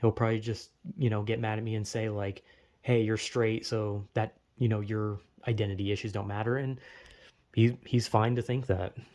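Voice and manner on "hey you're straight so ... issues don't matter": usual speaking voice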